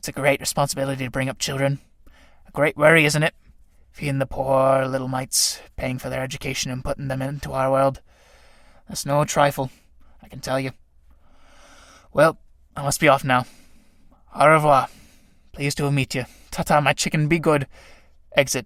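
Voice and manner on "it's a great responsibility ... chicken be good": very low-pitched, doting, proud dad voice. Reading a play aloud, voicing the fly father to the tramp: Ichneumon fly character voice. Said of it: "Enter Ichneumon fly, dragging the corpse of a cricket to its lair. Ichneumon fly. Look, larva, Daddy's bringing you something nice. / Daddy's bringing you something nice".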